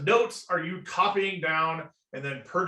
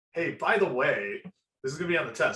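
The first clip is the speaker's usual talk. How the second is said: sly, knowing, winking tone; 2 semitones lower than usual. Imitating how teachers hint that something will be on the test: imitating a teacher's knowing wink. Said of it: "a little bit of wink in their voice".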